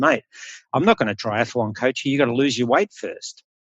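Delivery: ordinary talk, nothing marked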